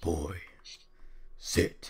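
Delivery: voice dropped right down, grumbling. You are showing how you lowered your voice until you could imitate him, in a grumbling Kratos voice. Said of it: "I started imitating Kratos from God of War".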